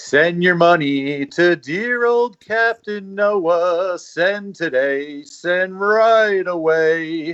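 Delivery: tv pledge-drive appeal announcer voice. Recalling flashbacks to his youth, breaking into a Captain Noah commercial voice. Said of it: "breaking into a Captain Noah commercial".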